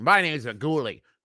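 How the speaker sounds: aggressive tone. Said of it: "there's an aggressive tone I could take".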